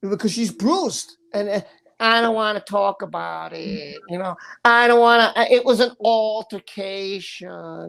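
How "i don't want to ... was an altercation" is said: put-on woman's voice, drawn out. Retelling what she said about being bruised: imitating her voice. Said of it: "I'm just trying to do her voice".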